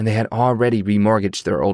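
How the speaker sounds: plain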